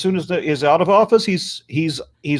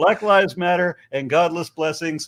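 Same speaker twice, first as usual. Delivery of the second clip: ordinary delivery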